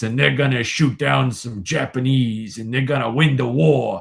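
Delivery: put-on overacted American voice. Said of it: "everybody talks like this".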